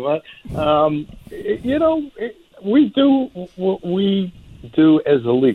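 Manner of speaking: very high-pitched voice, talking through laughter. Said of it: "I'm sorry if I'm laughing".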